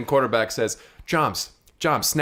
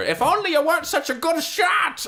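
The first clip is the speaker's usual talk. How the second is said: very high, rising, yelled, taunting villain voice. Narrating a casino fight, Metalface yells at the shooter hunkered behind tables. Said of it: "and he's yelling at her".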